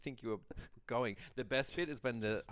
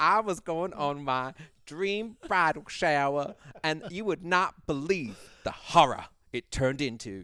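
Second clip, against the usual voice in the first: very loud, slow, really bad Southern accent; 5 semitones higher, 11 dB louder than usual. Imitating a woman describing her bridal shower: really bad put-on accent. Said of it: "I just put on a really bad accent".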